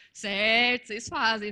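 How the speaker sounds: loud, emphatic, insistent delivery.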